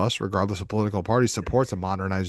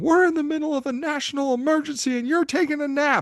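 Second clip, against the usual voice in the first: play-acted, very high screaming. Retelling a dad bursting in during a power blackout: imitating someone screaming. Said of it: "my dad is screaming at me".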